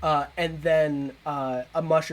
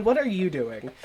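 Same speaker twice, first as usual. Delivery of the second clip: normal talking voice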